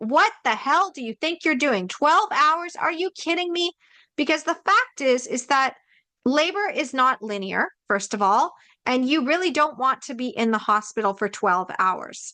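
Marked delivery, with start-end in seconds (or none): 0.0-3.7 high, held-back, contained screaming tone. Recalling reading a book's labor advice, the speaker acts it out: retelling a scream. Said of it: "I'm screaming at the book and being like".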